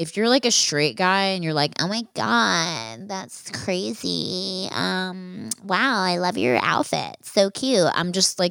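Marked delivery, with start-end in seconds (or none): 1.8-7.9 very slow, put-on camp voice.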